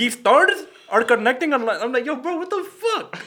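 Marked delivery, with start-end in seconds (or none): 0.0-1.8 put-on thick, laid-on, loud Indian accent. Quoting the man who taught that class, in a heavy indian accent. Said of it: "he had a heavy-ass Indian accent".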